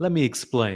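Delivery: put-on South African accent. Describing a fitness influencer to another speaker: Joel impression, South African accent. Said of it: "the South African accent".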